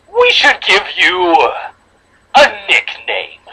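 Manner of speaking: demonic storybook voice, swooping pitch. Reading a story aloud, voicing the heroine's double in a demonic tone. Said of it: "I'm going to read her in a more demonic tone".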